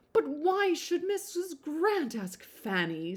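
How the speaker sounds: full-blown fit of high, swooping indignant fussing. Reader voicing Lady Bertram over Fanny's dinner invitation; Lady Bertram having a fit. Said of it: "absolutely having a fit about it".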